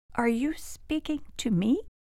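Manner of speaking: timid, shy, soft, high voice. A new marble table clock, addressed by an older clock, asking shyly. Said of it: "asked shyly".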